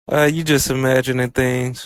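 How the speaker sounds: ordinary talk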